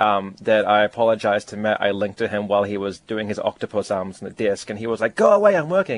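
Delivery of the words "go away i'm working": lively, energetic dismissive tone, pitched way up. Retelling being shooed away while interrupting someone working: energetic impression of Matt. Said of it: "I put more energy in, into the voice".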